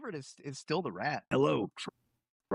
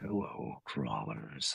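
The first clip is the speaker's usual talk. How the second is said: rough-edged, creaky, rumbling voice; 4 dB quieter than usual. Redoing a greeting line with a little more rumble: more rumble in the voice. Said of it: "a little more rumble in there".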